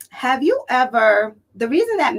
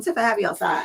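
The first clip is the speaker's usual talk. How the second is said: plain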